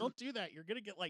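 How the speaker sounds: high, mock parental scolding. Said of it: "my parents would be like".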